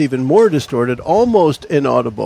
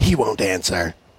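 warped, garbled, low, soft, distorted voice; 6 semitones lower, 7 dB quieter than usual. Voicing a woman's reply when asked about contacting someone by pager: distorted voice. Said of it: "she says in a distorted voice".

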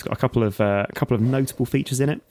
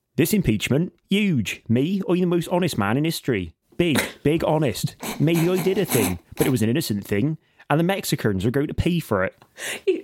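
pitched-up, blustering, put-on West Country accent; 6 semitones higher than usual. Doing an impression of a politician with a West Country accent: Donald Trump impression with West Country accent. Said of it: "my best Trump impression, but Trump will be from the West Country".

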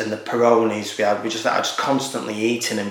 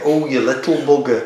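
loud, sudden, blurted outburst; 4 semitones higher, 5 dB louder than usual. Showing how a public figure would say it: Jordan Henderson voice. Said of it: "as Jordan Henderson would say".

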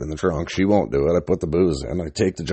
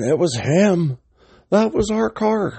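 very high-pitched screaming outburst; 13 semitones higher than usual. Retelling a guy who starts screaming while he waits for his dad, imitating a guy screaming. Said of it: "some guy starts screaming".

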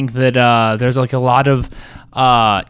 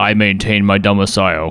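otherworldly, low, alien bird-man voice; 5 semitones lower than usual. Describing an alien planet scene, the speaker quotes a character's reply in a Birdperson voice. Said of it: "Channel some bird person there".

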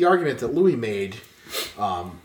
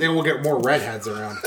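ordinary talk, nothing marked

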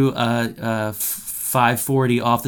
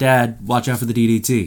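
normal talking voice

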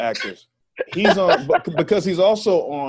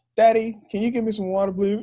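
put-on higher-pitched child's voice, polite and nice; 7 semitones higher than usual. Retelling how a daughter asked for water: imitating daughter asking. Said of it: "my daughter looks up at me like".

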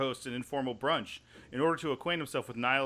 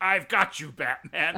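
campy 1960s TV villain voice, pitched higher; 4 semitones higher, 5 dB louder than usual. Picturing Kelsey Grammer as an old Batman villain: Kelsey Grammer as 1966 Batman villain. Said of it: "just in that old '66 style".

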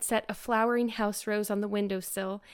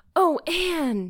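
gasping, much higher pitch; 6 semitones higher, 6 dB louder than usual. A girl fleeing to the dressing room amid cheers, gasping. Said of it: "gasped Jane".

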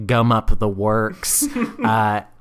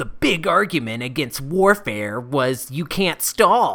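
sneering, snide, put-on mocking voice; 4 semitones higher than usual. Quoting a Reddit commenter's argument in their voice: Always Angry impression. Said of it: "this is in their voice, this is my impression of Always Angry".

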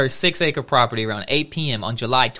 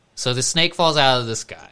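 normal talking voice

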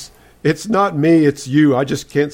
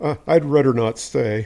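usual speaking voice

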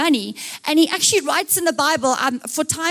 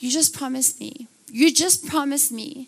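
mock pleading, tearful, near-crying voice; 4 dB quieter than usual. Retelling her mom at bedtime: imitating her mom pleading. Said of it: "she'd be like".

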